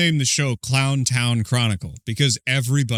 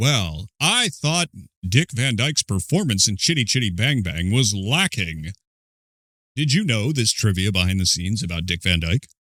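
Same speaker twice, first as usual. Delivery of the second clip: smug, self-satisfied, smarmy know-it-all tone; 2 semitones lower than usual. Contrasting with a certain kind of trivia-sharer: mock smarmy voice. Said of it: "Not in that like smarmy".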